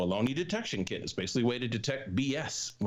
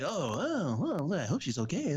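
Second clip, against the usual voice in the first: put-on concerned news anchor voice, higher, slower; 6 semitones higher than usual. Describing how the anchors come back after a report, imitating concerned news anchor. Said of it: "the anchors come back like".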